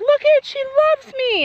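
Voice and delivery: very high, loud scream, joyful and thrilled.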